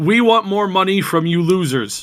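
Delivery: mocking high-pitched voice. Voicing the head of subscription services, translated: mocking voice of a subscription boss. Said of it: "put some skill behind this guy who is a, the head of subscription services".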